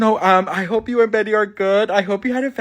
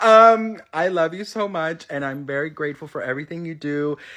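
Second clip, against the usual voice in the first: ordinary delivery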